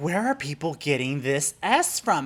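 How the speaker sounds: plain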